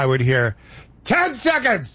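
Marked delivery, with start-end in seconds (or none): 1.1-2.0 put-on full-voiced delivery, very high. Speaker recalling someone calling timing cues into their ear: full voice. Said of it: "full voice".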